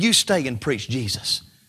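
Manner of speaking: cracking voice. Retelling a father's words on the phone: imitating a broken voice. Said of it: "My dad on the phone with a broken voice".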